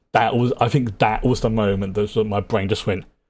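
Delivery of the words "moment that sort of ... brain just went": normal talking voice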